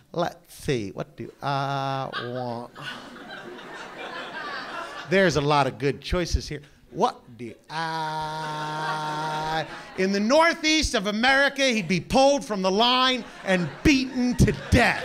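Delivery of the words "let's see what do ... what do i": slow, low, dawdling, indecisive Mississippi drawl. Speaker recalls a McDonald's in Mississippi: imitating the guy in front of him. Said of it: "Here's my impression of the guy in front of me".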